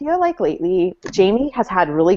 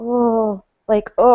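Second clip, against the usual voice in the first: mock squirming, uncomfortable, recoiling little "oh"; 4 semitones higher than usual. Acting out a character cringing at a remark: imitating a cringing reaction. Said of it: "physically cringes".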